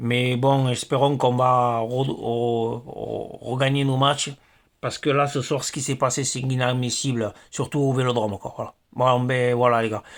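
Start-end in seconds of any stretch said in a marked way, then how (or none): 0.7-3.4 slow, halting stammer. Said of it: "je bégaye un peu".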